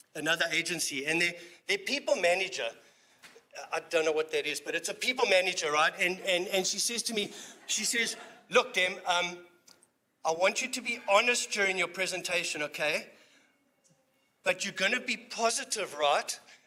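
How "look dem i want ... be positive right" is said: normal talking voice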